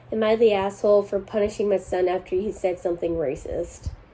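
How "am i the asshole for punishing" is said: ordinary delivery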